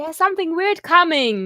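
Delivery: very loud, high-pitched alarm yell. In character, warning the group that something weird is coming, yelling. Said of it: "I yell".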